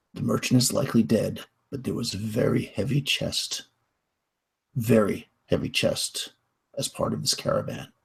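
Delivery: low, hushed, quiet whisper. Characters walk up to the party's table and tell them, in a low voice. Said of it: "they say in a low voice".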